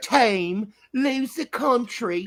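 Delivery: put-on British accent. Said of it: "You sound like you're from London".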